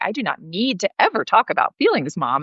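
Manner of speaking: mimicked incredulous tone. Retelling how her son answered about sharing feelings: imitating son's incredulous tone. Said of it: "he's so incredulous".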